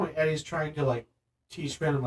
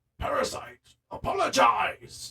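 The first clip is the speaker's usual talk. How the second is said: bad rough, creaky, rasping monster voice; 8 semitones higher than usual. Retelling the film moment when he objects to being called a parasite, bad Tom Hardy Venom impression. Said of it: "my crappy Tom Hardy Venom impersonation".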